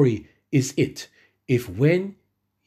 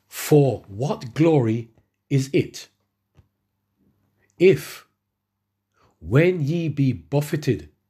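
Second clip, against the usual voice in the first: very slow, deliberate, word-by-word delivery. Rereading a bible verse aloud for listeners, saying it very slowly. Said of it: "I'm going to say this very slowly".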